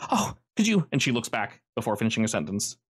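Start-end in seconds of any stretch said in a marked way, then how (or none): 0.1-0.9 frantic, panicked, pitched very high. Game narrator voicing a woman who bursts out of the woods toward the party, panicked. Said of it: "looking incredibly panicked".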